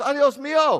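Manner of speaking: loud, panicked crying out. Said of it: "She goes".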